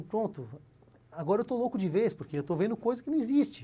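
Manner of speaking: play-acted, tearful words sobbed out crying. Retelling own past words after waking up somewhere unknown: imitating own past crying. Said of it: "eu comecei a chorar e falar assim".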